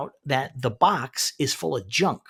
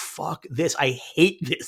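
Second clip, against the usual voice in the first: put-on furious, angry, fed-up outburst. Recapping a scene where Fisk gets his briefing, mock-angry outburst as Fisk. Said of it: "He's like so angry about it".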